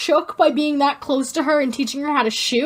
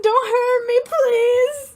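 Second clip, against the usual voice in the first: fake-frightened, very high, drawn-out scared voice; 9 semitones higher than usual. Imagining how Jasper would react: imitating a scared Jasper. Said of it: "I just imagine Jasper just like".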